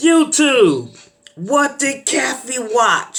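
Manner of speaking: loud, very high-pitched shout. Retelling what a friend yelled at people on the bus: imitating someone yelling. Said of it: "he just yells in general".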